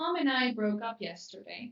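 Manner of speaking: ordinary talk, nothing marked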